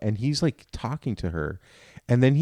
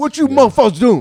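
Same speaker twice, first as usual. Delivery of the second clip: very loud, high put-on voice; 12 semitones higher, 9 dB louder than usual.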